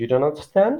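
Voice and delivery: rising lift at the end of "understand". Explaining a statement turned into a question: rising question intonation on understand. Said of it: "adding the question intonation".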